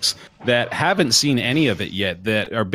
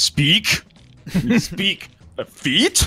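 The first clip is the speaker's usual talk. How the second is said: halting, one-word, desperate caveman voice, pitched up; 8 semitones higher than usual. Acting out a desperate caveman on a first date, one-word sentences: desperate caveman voice. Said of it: "impression of a really desperate caveman".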